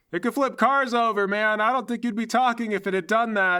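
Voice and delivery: shouting. Voicing an FBI agent who just survived explosions: shouting. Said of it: "You don't have to yell".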